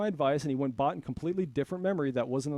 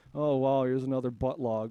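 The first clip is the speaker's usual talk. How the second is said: mocking put-on voice, lower in pitch; 3 semitones lower than usual. Mocking a YouTuber's boring delivery: imitating Meathead McKellar's monotone voice. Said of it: "he kinda talks with a monotone voice".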